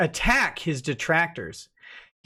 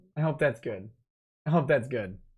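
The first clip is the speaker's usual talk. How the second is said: ordinary delivery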